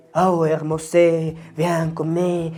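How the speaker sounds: mock French accent, words ending in added e. Mocking the cliché of how people fake French: Pepe Le Pew mock French accent. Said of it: "como Pepe Le Pew, como el zorrillo, terminaba todas las palabras en E".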